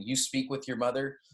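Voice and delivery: ordinary talk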